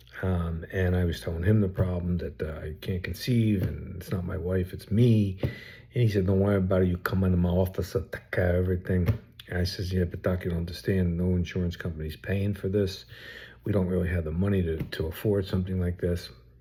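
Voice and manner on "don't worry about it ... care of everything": put-on thick, laid-on Italian accent. Retelling what the doctor said to him, in a thick italian accent. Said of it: "Very thick Italian accent".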